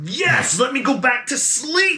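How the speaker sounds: really mad, very high character voice, slow fury. Voicing an angry woken character answering a player: really mad NPC. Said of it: "he looks really, really mad, and he says".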